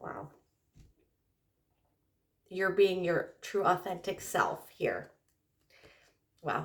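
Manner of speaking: crying, tearful voice. A speaker addresses Aquarius directly, crying. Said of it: "I'm actually crying".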